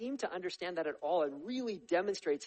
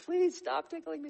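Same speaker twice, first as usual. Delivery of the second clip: put-on high, slow, giggly pleading like a tickled kid. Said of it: "they're pleading with you".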